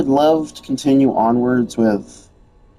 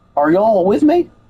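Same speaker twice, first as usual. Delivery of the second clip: high, terrible put-on Southern accent; 8 semitones higher than usual. Hyping up a tough task, in a terrible Southern accent. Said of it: "this is a terrible southern accent that I'm trying to make".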